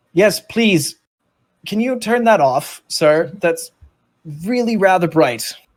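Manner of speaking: high, loud, polite creature voice.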